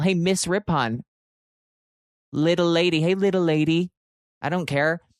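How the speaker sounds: coyote voice. Retelling a run-in with a coyote, the speaker voices the coyote: coyote voice. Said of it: "The coyote's the one who probably wrote".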